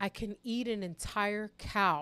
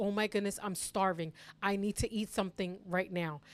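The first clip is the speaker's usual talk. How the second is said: panicked, frantic-sounding delivery. Retelling sudden hunger to the chat: imitating own panic. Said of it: "this full panic mode".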